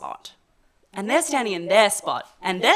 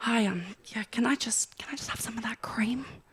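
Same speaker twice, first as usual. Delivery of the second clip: put-on hushed voice, quieter, slower; 8 dB quieter than usual. Showing how someone asks for something private they don't want to say aloud: acting out a hushed request. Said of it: "something you might not want to scream".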